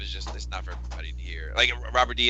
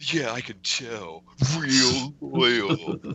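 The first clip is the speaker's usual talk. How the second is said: taunting, scornful, sarcastic mocking voice, acted out; 3 semitones higher than usual. Retelling a man's reply in a serious conversation, imitating his mocking voice. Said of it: "Now with the mocking voice".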